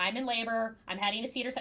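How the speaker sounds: calm, cool, matter-of-fact, no fuss. Recapping a TV scene, acting out a woman's line, imitating a matter-of-fact tone. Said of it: "Miranda's like very like matter of fact".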